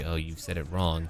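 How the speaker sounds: usual speaking voice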